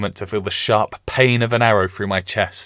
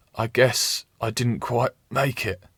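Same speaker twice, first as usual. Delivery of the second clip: feeble, weak voice, quieter; 5 dB quieter than usual. Reading a story aloud, a wounded man speaking: weak voice. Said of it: "he says in a weak voice".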